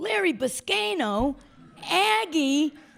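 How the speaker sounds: very high, loud screamed call. Retelling how a man in the front row called out names during the play: imitating someone screaming. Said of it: "he's screaming".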